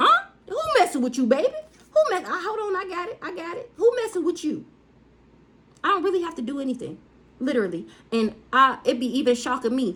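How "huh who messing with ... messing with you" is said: pitched-up voice, stumbling over the words. Acting out God's reply to a complaint: voicing God. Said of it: "He could be like".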